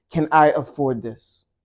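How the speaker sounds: normal talking voice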